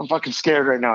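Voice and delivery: put-on nervous voice. Retelling a teammate's nervous confession the morning after a night out: imitating a nervous teammate. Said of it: "he's so nervous".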